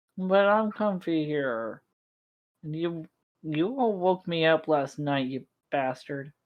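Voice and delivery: sleepy, groggy, grumpy grumble. Woken by a companion who wants to make breakfast, as grumpy, groggy Corey. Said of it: "you see a grumpy, groggy [name] slowly getting up, / you see a grumpy, groggy [name] slowly getting up, just heavily, thump, thump, What? his bare feet going on the ground as he pushes himself up to s".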